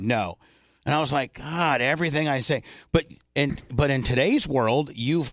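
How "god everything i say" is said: plain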